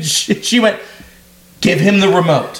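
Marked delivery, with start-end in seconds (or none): 1.6-2.6 put-on stern woman's voice. Quoting their mom's words to a young kid, retelling mom's stern voice. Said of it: "Just stern mom voice".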